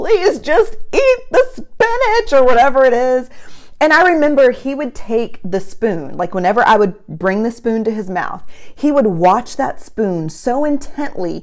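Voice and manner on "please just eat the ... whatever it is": mock very high, tearful, crying begging voice. A mother retells pleading with her baby son to eat, retelling crying while pleading. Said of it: "and I'm like crying".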